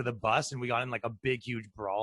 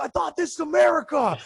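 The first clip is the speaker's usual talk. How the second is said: very loud, high-pitched screaming; 9 dB louder than usual. Retelling how a man yelled at cops telling the crowd to disperse: imitating a man yelling. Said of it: "He's yelling and screaming".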